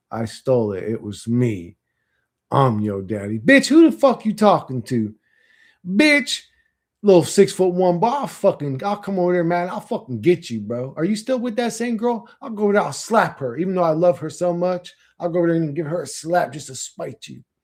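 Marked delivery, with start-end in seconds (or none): 3.4-17.4 put-on, street-tough gangster voice. Mid-conversation, the speaker launches into a tough-talk bit, acting gangster. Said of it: "I don't know why I got all gangster with you".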